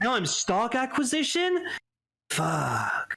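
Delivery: swooping, put-on voice like an English dub. Mocking a show character who lost his company, in a put-on dub voice. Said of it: "that's my that's my dub voice for him".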